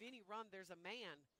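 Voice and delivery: ordinary talk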